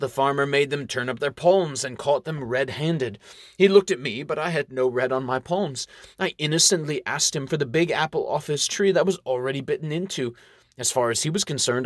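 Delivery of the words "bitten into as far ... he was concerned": ordinary delivery, nothing marked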